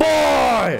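put-on loud scream. Reacting to the loudest scream heard from Kratos, imitating Kratos screaming. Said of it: "the loudest scream I ever heard from Kratos".

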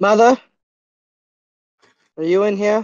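calling out loudly. A player's character reaches a house with its door wide open, yelling out. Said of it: "I yell out".

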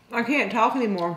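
words pushed around a full mouth. Closing a frugal-meals video for viewers, talking with a full mouth. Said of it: "My mouth is still full".

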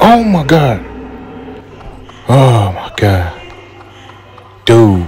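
overwhelmed panicked freak-out, swooping and drawn out. A player looks for an exit while everybody in the game is dying: freaking out. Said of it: "I'm like freaking out here".

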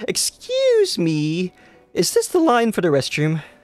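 sickly sweet, syrupy, sing-song voice. Narrating a stranger tapping someone in a food line, ask in a sickly sweet voice. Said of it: "almost sickly sweet voice".

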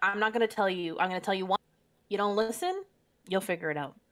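ordinary delivery

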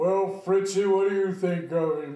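very loud, booming voice. Retelling how a man spoke to his parakeet in the kitchen, loud booming voice. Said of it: "a loud, booming voice".

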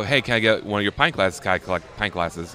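ordinary talk

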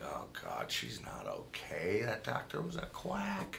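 soft, worried murmur.

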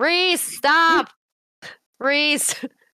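shouting. Running after a character to get her attention: yelling a name after someone. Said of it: "I'm yelling this entire time".

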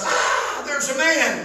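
put-on very slow, drawn-out holler. Retelling how Jennifer jumped straight up in bed at night, imitating Jennifer hollering. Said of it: "jumps straight up in the bed and hollers".

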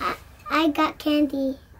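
ordinary delivery

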